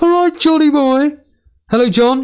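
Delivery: very high, squeaky voice way up in the register. Greeting a guest while doing an impression of Jason. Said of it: "I'll do an impression of Jason".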